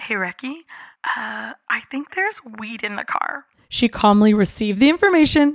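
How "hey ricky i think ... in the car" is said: hushed, barely audible half-whisper under the breath. Retelling words said to a friend while walking to a holding room: imitating own half-whisper. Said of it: "I whispered to her under my breath".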